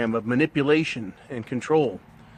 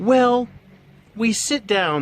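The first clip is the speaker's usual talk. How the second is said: high, very slow put-on woman voice; 8 semitones higher, 4 dB louder than usual. Retelling what a couple said about who's the boss, imitating a woman's voice. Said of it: "This is the woman voice I have".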